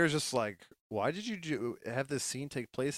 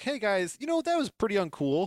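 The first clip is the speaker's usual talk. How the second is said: put-on, high-pitched, yelling telling-off tone; 6 semitones higher, 3 dB louder than usual. Retelling a story, the speaker acts out a woman yelling at a man, imitating someone yelling. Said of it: "she starts yelling at him".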